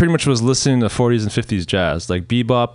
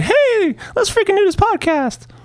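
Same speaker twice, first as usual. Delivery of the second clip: put-on cartoon voice, much higher pitch. Retelling a friend's early-morning call about the podcast, Mickey Mouse voice. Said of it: "give me a Mickey Mouse voice".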